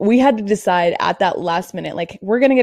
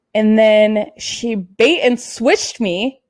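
usual speaking voice

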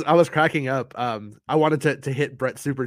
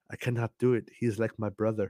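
soft put-on accent drifting Indian; 2 semitones lower, 6 dB quieter than usual. Retelling how Nick said the line in Fortnite, Obi-Wan impression sounding Indian. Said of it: "it sounds like he's like from India or something".

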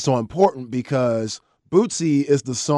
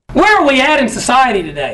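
booming, very loud, high, swooping hype yell; 12 semitones higher, 9 dB louder than usual. A host announces a segment name to a co-host on a show; very loud. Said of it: "I don't know why that was so loud".

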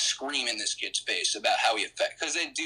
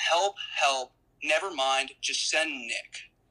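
higher-pitched yelling; 3 semitones higher than usual. Retelling what the staff yelled for help: imitating staff yelling. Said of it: "they yell".

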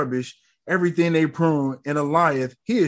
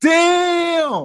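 very high, loud, stunned shouted exclamation. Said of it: "I was like".

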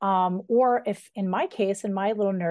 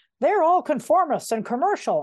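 higher, grumbling put-on grumpy old man voice; 7 semitones higher, 4 dB louder than usual. Quoting what is said in literary circles, grumpy old man voice. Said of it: "I don't know why I gave that a grumpy old man voice".

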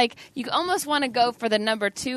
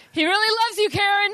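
mock very high, loud blurted voice with no volume control; 10 semitones higher than usual. Speaker demonstrating a character who speaks loudly all the time, Will Ferrell character impression. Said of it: "he has the voice modulation problem, so he speaks at a high level all the time".

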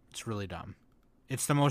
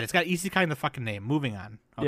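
plain

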